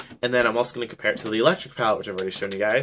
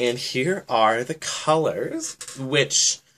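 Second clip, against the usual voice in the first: slow voice cracking and breaking on words; 2 semitones higher than usual. Showing the colors in a palette, voice cracking. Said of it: "my voice cracked".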